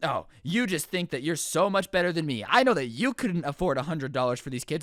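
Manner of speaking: plain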